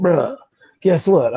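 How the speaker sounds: genuinely raspy, rough-edged voice. Retelling a sister's phone call, imitating her raspy voice. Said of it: "she got a real raspy voice like, uh, Peppermint Patty".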